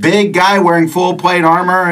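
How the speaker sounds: ordinary talk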